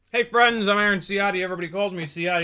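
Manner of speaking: fast, high talk around a mouthful of food. Introducing yourself to viewers, talking with mouth full. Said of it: "I've got a mouthful of food".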